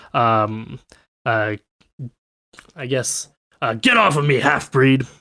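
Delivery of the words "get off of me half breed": orc character voice. Game master voices an orc wrestling against Grolo, in an orc voice. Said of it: "he says in Orcish".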